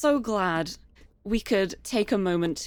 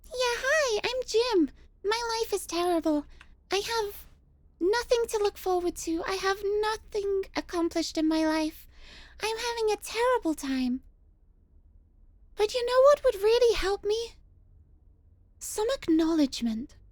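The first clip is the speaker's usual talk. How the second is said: squeaky, cutesy uwu voice, pitched very high; 13 semitones higher than usual. Speaking as jim after a redeemed voice request: uwu voice. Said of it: "Thank you for the Uwu voice".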